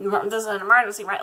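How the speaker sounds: fast, super flustered, exasperated voice, acted out. Retelling what the speaker said back then, acting out past fluster and frustration. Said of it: "obviously super flustered and frustrated".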